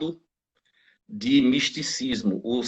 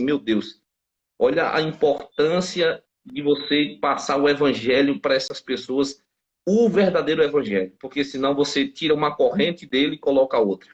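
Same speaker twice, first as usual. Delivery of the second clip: normal talking voice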